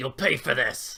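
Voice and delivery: rough, growled voice. Playing a game character who growls while dashing through the air, rough growling voice. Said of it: "in a rough common voice".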